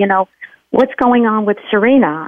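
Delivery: ordinary delivery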